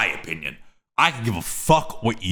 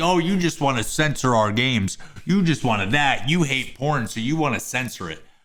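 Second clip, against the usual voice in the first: plain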